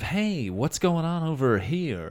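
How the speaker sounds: suave, friendly, debonair charmer voice. Describing the voice they tried to go with, debonair fun guy voice. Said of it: "go with a sort of debonair, fun".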